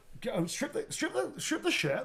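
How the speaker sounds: put-on West Country accent. Imitating the real voice of the actor in the suit: Dave Prowse's West Country voice. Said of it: "That's actually his fucking voice".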